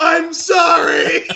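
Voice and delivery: blubbering, tearful, high, sobbing voice. Retelling a movie scene where a character cries while stabbing a pig: imitating someone crying. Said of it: "And he starts crying".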